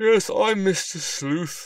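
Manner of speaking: groggy, sleepy, very high pitch, very slow. Detective Sylvester answers a delivery man's question: sleepily. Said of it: "Sylvester said sleepily".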